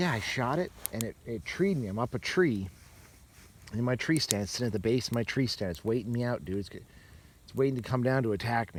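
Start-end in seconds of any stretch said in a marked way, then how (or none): none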